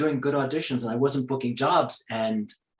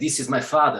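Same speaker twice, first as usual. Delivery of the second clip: generic standard Russian accent. Showing how the phrase sounds: generic russian accent. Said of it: "which is basically generic Russian".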